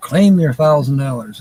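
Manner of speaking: ordinary talk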